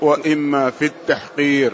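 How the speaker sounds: ordinary delivery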